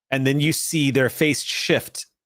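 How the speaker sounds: usual speaking voice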